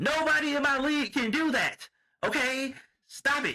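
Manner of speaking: high, slow, drawn-out yelling. Retelling a player yelling at her workout partner: imitating Aja Wilson yelling. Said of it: "she's, like, yelling at him".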